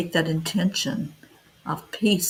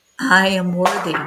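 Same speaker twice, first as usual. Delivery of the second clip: commanding, authoritative, louder; 5 dB louder than usual. Leading an affirmation for listeners to repeat: with authority. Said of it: "Say it with authority".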